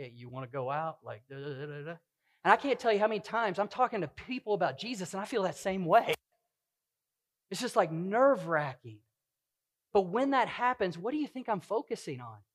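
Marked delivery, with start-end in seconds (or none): 0.0-2.0 put-on stutter, lower and quieter. Retelling the first time he asked his wife on a date, imitating his own stuttering. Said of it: "I was stuttering like".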